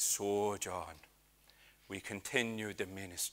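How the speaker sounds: put-on accent sliding into soft, slow Irish. Retelling what a man told someone, attempting an accent: accidental irish accent. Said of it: "I was going Irish".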